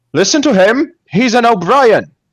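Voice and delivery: very high, loud, rousing rallying shout. Playing a character in a tabletop game, shouting after another speaks: rallying shout. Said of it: "I'm gonna shout like".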